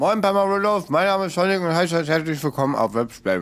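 talking with mouth full. Greeting viewers while still chewing food: talking with mouth full. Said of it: "Ich habe noch den Mund voll".

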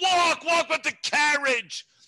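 very high, loud yell. Retelling how dad yelled during home filming: imitating dad yelling. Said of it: "he's yelling at her".

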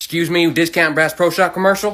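ordinary talk

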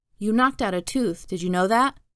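ordinary delivery, nothing marked

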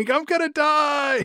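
very high, wailing shriek, the word die drawn out. Joking about a cyclist hit by a car: imitating someone screaming. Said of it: "He was screaming".

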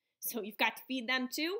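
harrumphing, snorting. An old woman asks Eliza about the narrator, harrumphing and snorting. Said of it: "harumphed and snorted".

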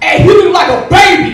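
screaming high and loud.

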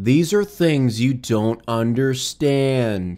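mock-flat monotone voice. Making fun of a guy in the footage, in a mocking monotone imitation. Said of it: "he has the most monotone voice".

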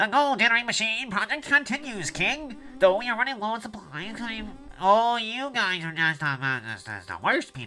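nasally character voice. Voicing a game character reporting to the king; nasal put-on voice. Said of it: "You know, your voice sounds very nasally".

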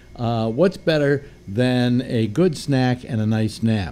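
normal talking voice

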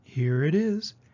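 usual speaking voice

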